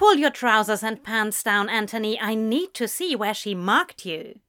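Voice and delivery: ordinary delivery, nothing marked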